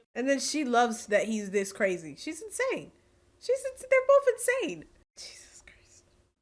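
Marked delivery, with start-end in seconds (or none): 5.2-6.1 soft, breathless whisper under the breath. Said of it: "Why are we whispering in the dark?".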